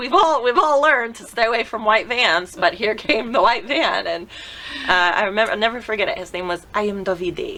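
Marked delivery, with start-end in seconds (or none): 6.2-7.6 bad put-on Italian accent. Recalling the agency driver, the speaker gives his name: Davide's Italian accent. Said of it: "I'm not doing the accent right".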